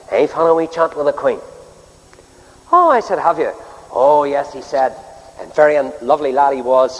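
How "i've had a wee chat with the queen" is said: put-on nice, pleasant Northern Irish Belfast accent. Retelling what a wee fellow said to him afterwards, nice Belfast accent. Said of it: "in a nice Belfast accent".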